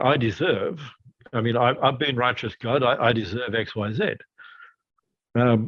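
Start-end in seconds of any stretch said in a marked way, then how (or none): none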